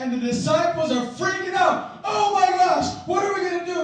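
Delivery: high, shouted, panicked cry.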